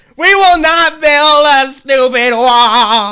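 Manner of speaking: loud, slow oratorical cadence, stretching out wall. Mocking a speech clip by repeating its line: Elizabeth Warren impersonation. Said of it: "when you do a Elizabeth Warren impersonation".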